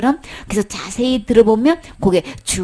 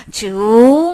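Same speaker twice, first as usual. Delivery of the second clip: rising curved tone on 중; 5 dB louder than usual. Explaining a chinese character's pronunciation, saying 중 with upward-curving pitch. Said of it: "발음이 이렇게 휘어져서 올라가요".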